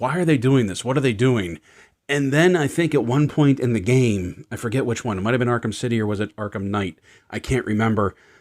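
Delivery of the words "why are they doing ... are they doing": ordinary delivery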